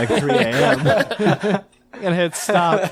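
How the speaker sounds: slow delivery with laughter throughout.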